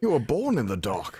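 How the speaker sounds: voice dropped deep and low. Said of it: "Beautiful voice".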